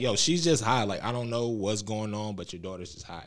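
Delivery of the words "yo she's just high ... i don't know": plain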